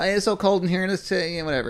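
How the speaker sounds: high, offhand complaining voice with hesitant uhs. Retelling a complaint about the cold room: imitating Jordan complaining. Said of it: "That, that was a good rendition".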